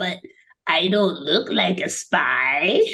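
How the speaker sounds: put-on tiny alien voice, very slow. Describing the cute desk man, the speaker quotes him in his little alien voice. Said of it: "in his little alien voice".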